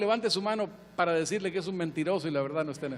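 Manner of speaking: said quickly, rattled off fast.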